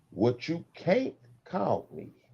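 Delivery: very slow, careful, hushed, word by word. Addressing the audience, saying this part very slow and careful. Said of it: "I'm gonna say this very slowly and carefully".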